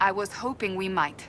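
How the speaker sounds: ordinary delivery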